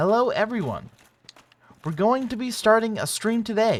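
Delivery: high, loud text-to-speech voice. Complaining about a voice he finds terrible, then doing a TikTok TTS voice impression. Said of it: "the fucking TikTok T T S voice".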